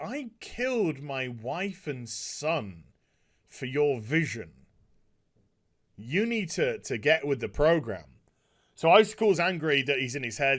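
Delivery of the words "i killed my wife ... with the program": mock cold, icy, chilly, detached delivery. Retelling a villain's line from an episode: imitating a cold delivery. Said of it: "very coldly says".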